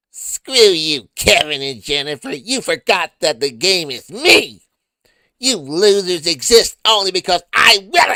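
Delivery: shrill, booming, very high, very loud puppet voice. Reading a requested message aloud, doing the Puppet Eric voice. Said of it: "Puppet Eric voice please".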